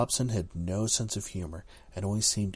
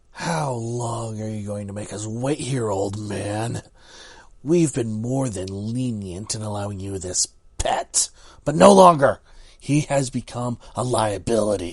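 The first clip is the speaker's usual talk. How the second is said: booming, loud voice full of hatred; 2 semitones higher, 12 dB louder than usual. A government man speaking to an old man, hate-filled. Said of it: "a strange, hate-filled man said. [name] knew he was called [name]. He was with the government and was assigned this faculty. / a strange, hate-filled man said. [name] knew he was called [name]. He was".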